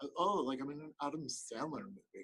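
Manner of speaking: adorable, sweet little lisp on s sounds. Showing how an actress talks, with her little lisp: Drew Barrymore impression with lisp. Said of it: "talks like this, and she's like".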